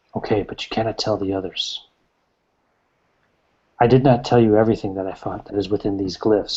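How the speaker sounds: conspiratorial, secretive stage whisper. Voicing a character who leans over to the player, kind of whispering. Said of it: "he leans over to you and he kind of whispers".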